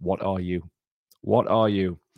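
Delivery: ordinary talk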